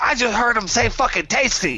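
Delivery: very high, very loud, blurted exclamation. Speaking in character after hearing strange voices: saying it very loudly. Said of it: "very loudly".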